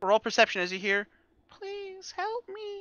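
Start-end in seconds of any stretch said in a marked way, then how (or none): 1.5-2.8 put-on small, tiny little girl voice, very high, hushed. A game master voicing a plea the players hear, in a little girl's voice. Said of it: "in this, like, little girl's voice".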